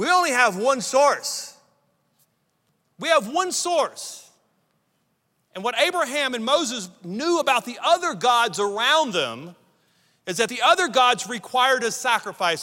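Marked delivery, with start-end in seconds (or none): 0.0-4.3 put-on thick Russian accent, higher. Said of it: "with a thick Russian accent".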